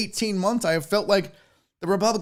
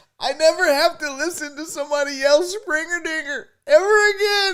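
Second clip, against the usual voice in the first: mock tearful voice, higher pitch; 10 semitones higher than usual. Joking about a player leaving, pretending to be crying: fake crying. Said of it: "I'm not crying 'cause I'm sad".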